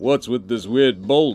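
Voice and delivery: tough, gruff action-hero movie voice. Voicing the Pokémon Darmanitan while playing the game, in a Sylvester Stallone voice. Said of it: "impromptu Sylvester Stallone kind of voice for Darmanitan".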